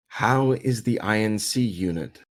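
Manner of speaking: slow, ethereal, otherworldly voice with a chuckle. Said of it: "this ethereal chuckling".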